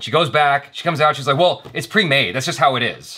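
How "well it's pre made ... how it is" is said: acted-out irritated, fed-up, annoyed tone. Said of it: "She was so pissed at me".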